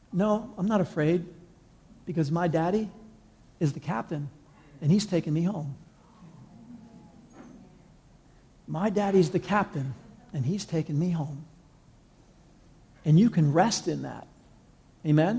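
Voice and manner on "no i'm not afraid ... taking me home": put-on quiet, very calm, steady, untroubled little-girl voice. Retelling a little girl's answer to a worried man on a plane: imitating a girl speaking very calmly. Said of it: "very calmly".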